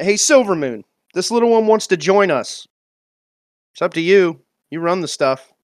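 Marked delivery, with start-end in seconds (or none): 0.0-2.7 raised, high-pitched hollering voice. In a role-play scene, calling over to another character: hollering over. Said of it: "I'll holler over".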